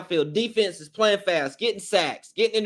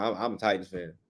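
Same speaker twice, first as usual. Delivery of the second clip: very low, soft, subdued voice; 12 semitones lower, 8 dB quieter than usual. Retelling answering a Falcons fan who asked about his team: said softly. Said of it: "I had to say it like that".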